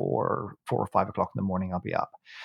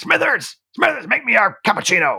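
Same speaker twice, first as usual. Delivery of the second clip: high, loud, bossy big boss voice. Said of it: "big boss would come down".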